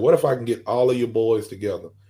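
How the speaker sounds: usual speaking voice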